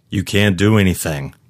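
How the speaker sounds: plain reading voice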